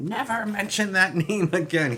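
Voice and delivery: resentful, bitter robot voice, high and loud. Reading a line aloud, the speaker does it in Starscream's voice. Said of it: "I just read it in Starscream's voice".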